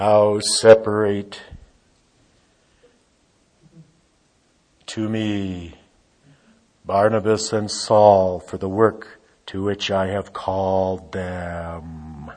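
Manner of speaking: deep, low-pitched, godlike voice from above. Reading a Bible verse to listeners, trying a Holy Spirit voice. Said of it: "I'll try to do a Holy Spirit voice".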